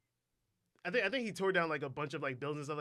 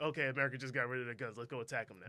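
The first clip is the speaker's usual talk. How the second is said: normal talking voice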